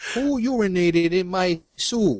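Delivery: put-on high Brooklyn accent. Playing Emeril as he finds his soup disgusting, failed Emeril impression, Brooklyn accent. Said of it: "That was a Paul Brooklyn accent".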